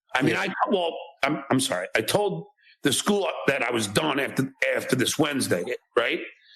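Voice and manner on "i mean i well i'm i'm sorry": halting, stuttering, stammering, tripping over words. Answering about resigning from the school, stuttering and stammering. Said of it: "notice the stuttering and stammering".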